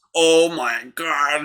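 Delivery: mock horrified, freaked-out, losing-it exclamation. Retelling a mother walking in on something: imitating someone freaking out. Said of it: "She was freaking the fuck out".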